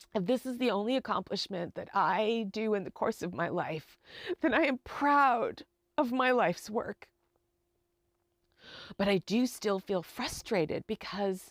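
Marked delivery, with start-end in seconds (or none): 0.1-7.1 emotional, choking-up, catching voice. Speaker talking about their life's work, choking up emotionally. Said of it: "sorry, I'm getting emotional".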